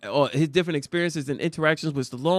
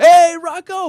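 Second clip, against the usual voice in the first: very loud, raised shouting call; 13 semitones higher, 13 dB louder than usual. Retelling how people on the street greeted the tour guide: imitating people shouting a greeting. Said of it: "People will come out and shout him out".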